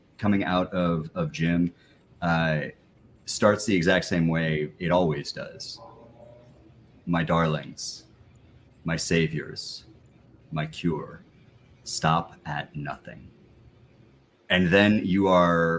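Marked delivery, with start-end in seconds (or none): 7.1-13.3 strange, otherworldly, vaguely feminine alien voice. Storyteller voicing a recurring message, vaguely feminine alien voice. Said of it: "this vaguely feminine but absolutely alien voice".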